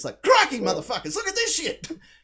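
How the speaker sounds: put-on very high, swooping, sing-song Australian accent. Retelling actors in a movie slipping in and out of their accents, exaggerated Australian accent. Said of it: "slipping in and out of their Australian accents".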